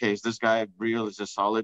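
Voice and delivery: normal talking voice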